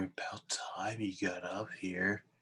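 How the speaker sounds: quiet, barely voiced whisper. A player's character leans up close to another character's face, whispering. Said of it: "and I whisper".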